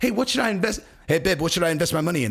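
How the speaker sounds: fast, very bad put-on Australian accent. Acting out Volkanovski after signing a big deal, bad Volkanovski accent impression. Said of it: "That's the worst accent ever".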